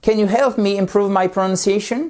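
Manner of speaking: voice climbs at the end on the word pronunciation. Demonstrating an English yes-no question, rising pitch on pronunciation. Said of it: "Vous remontez parce que c'est une yes-no question".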